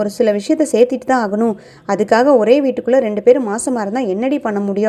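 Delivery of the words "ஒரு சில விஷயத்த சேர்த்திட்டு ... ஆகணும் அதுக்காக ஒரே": usual speaking voice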